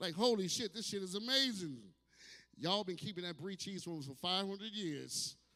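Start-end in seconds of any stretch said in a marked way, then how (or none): none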